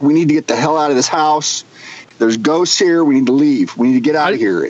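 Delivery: ordinary talk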